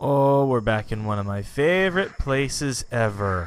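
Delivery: plainly sarcastic, audible sarcasm. Arriving back at the swamp, sarcastic. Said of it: "Can you hear the sarcasm in my voice?".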